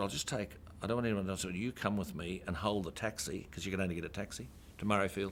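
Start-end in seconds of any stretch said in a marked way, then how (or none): none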